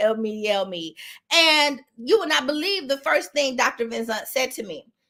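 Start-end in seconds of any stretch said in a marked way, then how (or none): 0.0-0.9 put-on tearful crying voice, lower, slower. Acting out her own plea to the doctor, retelling a tearful plea. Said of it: "I'm crying".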